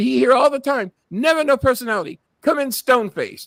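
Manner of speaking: very high, put-on Korean accent. Quoting his doctor's assistant, the speaker tries a Korean accent. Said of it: "I'm trying to do a Korean accent".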